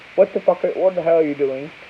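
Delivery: ordinary talk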